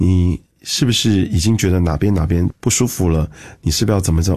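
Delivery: plain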